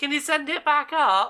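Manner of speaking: loud, high, echoing shout from far above. Narrator voicing Brilmara after the lift stops, Brilmara shouting down. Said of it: "Brilmara shouts down".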